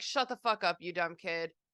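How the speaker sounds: ordinary talk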